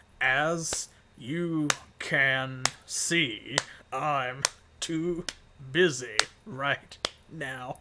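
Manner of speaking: loud, halting, choppy, one word at a time. The smith, busy hammering, answers the party choppy, one word at a time. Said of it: "speak only in one word increments in between the rhythm of your hammering".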